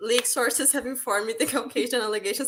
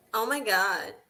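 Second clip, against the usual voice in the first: put-on American girl voice and accent.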